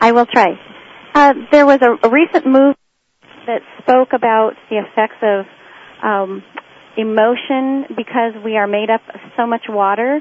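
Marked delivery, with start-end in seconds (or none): 0.0-2.8 louder, raised speaking voice. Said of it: "Could you possibly speak up a bit?".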